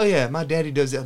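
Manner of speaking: put-on sassy Southern accent. Mocking grown men who call their dads daddy, in a sassy southern accent. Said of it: "When you said it in that accent".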